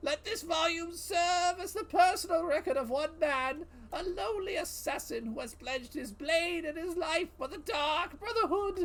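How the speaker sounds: shrill, loud character voice, pitched way up, projected. Reading a Dark Brotherhood volume aloud, in a Cicero voice. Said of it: "I don't think I can do the Cicero voice for an extended period of time".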